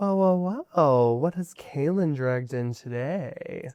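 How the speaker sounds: smooth, soothing, sassy voice with catty edge. Storyteller voicing a woman who approaches the group, soothing voice with attitude. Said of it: "she has this soothing voice and kind of this air of really cuntiness".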